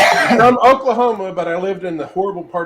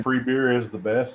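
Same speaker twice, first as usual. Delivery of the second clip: ordinary talk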